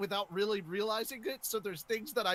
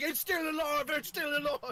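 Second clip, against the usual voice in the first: alarmed, frantic, high shout in put-on voice; 6 semitones higher than usual. Playing a character dragging a body, shouting in character. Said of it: "and then me shouting".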